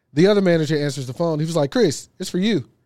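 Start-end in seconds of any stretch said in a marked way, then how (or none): 1.8-2.7 put-on chirpy, bird-like little voice. Retelling how the other manager called him to the phone: imitating a chirpy voice. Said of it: "He says it like a chirper voice".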